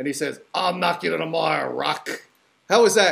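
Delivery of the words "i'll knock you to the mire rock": rough, creaky movie-character voice. Show host closing a segment with an impression of Mickey from Rocky. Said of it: "giving you my impression of one of the characters from Rocky".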